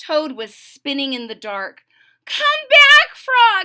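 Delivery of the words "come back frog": shrill, very loud, high-pitched calling shout. Reading a story aloud, Toad calls for his friend Frog who disappeared, shouting. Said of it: "he shouted".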